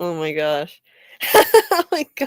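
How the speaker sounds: giggling laughter, pitch swooping up and down. Reacting to what was just read out, laughing loudly. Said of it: "I'm laughing too loud".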